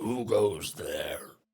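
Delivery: gnarled voice from the throat. Narrator voicing a man challenging the newcomers: gnarled voice. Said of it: "You hear this gnarled voice from this man's throat".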